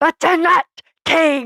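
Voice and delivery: high, declaiming king voice. Speaker breaking into an Odin voice mid-conversation. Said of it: "I got a little Odin in me".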